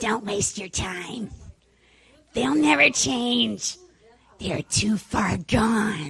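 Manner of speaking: loud put-on demonic devil voice. Acting out what the devil says to you, put-on devil voice. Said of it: "I'm going to do my devil voice".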